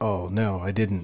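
ordinary delivery

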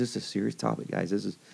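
quiet, sober, serious voice. Speaker retells how a woman kept the kids engaged, imitating her serious, quiet voice. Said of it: "that serious, quiet voice".

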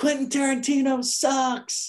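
very high, shrieked, jeering scream. Telling a story about guys leaving the MGM yelling insults; retelling guys screaming. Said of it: "and they're screaming".

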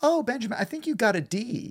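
high, breezy, very casual tone. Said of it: "she said very casually".

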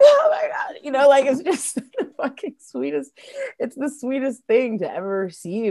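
tearful outpour, very high and very loud. Retelling receiving sweet words about the band, imitating themself crying. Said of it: "And I'm like crying like".

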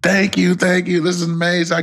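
mock very high voice, crying, tearful. Retelling how she reacted when handed her medal, imitating someone crying. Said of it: "Now it's like waterworks all over the place".

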